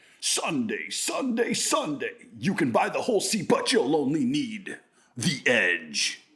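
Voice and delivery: swooping, sing-song put-on announcer voice. Imitating a Monster Jam commentator for another speaker: Monster Jam commentator voice. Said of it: "that commentator, like".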